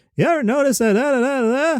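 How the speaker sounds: high sing-song stand-up comedian voice. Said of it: "that kind of sing-song".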